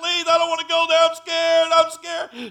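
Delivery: mock frantic, high, very loud, terrified, desperate. Retelling a woman's words in the last minutes of her life: mimicking desperate begging. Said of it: "she was begging not to be going to hell".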